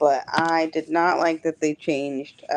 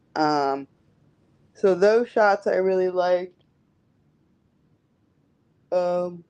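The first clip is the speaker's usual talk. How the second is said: speaking through a yawn; 3 semitones higher than usual. Speaker talking to an audience, then apologizing for yawning; speak yawning. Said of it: "sorry for the yawning".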